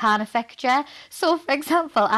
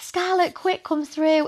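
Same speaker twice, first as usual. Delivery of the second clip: put-on shouted call, higher pitch; 6 semitones higher than usual. Recalling how their mum would shout for them to come: retelling a shout. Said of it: "my mum would shout at me".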